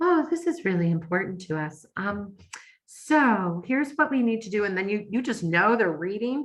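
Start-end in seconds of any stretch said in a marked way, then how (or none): 0.0-4.6 mock honeyed, sugary, syrupy sweet voice. Imitating a customer service agent reading from a screen: imitating a syrupy sweet tone. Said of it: "uses that syrupy, sweet tone of voice".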